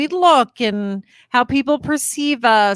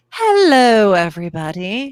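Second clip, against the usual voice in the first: put-on British accent. Greeting everybody at the start: British accent. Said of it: "I don't know why I'm speaking in a British accent".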